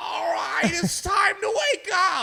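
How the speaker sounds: screamy angry voice, very high, slow, drawn out. Showing how a narrator in the head would sound: not great Gilbert Godfrey impression. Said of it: "not even a great Gilbert Godfrey impression".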